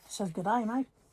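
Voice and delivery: put-on Australian accent. Reading a card from Australia aloud in an Australian accent. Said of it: "My Australia accent's not too bad".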